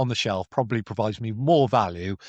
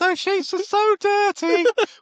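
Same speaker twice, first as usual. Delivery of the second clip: put-on scolding mum voice, higher and louder; 4 dB louder than usual. Imitating a friend's mum complaining about his sheets: imitating a friend's mum. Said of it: "exact same impression of my mum".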